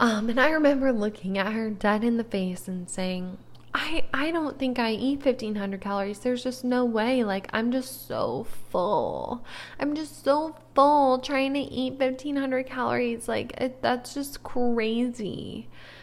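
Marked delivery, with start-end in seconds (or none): 3.8-15.7 sarcastic mocking put-on voice, higher. Retelling what they once said to someone's face, in a mocking put-on voice. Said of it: "I'm making that voice".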